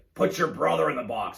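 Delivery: rough, creaky, raspy voice. Retelling a true story about a coach and a penalty, raspy Brett Hull impression. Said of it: "he's got this really like raspy voice".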